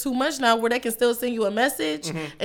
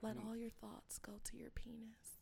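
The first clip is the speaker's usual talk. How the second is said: put-on phone-sex line voice, quieter; 29 dB quieter than usual. Doing the voice another speaker asked for: put-on 1-900 hotline voice. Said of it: "not one nine hundred voice on".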